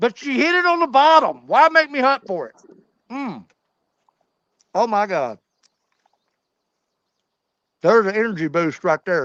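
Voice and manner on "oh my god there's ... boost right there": eating while talking, mouth full. Speaker eating and talking to listeners, mid-bite: talking while chewing. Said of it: "because I'm chewing".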